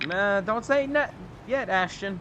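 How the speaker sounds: strong, very slow, high-pitched southern drawl. Answering another player during a race, very southern way of saying it. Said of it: "that was the most southern way you could say that".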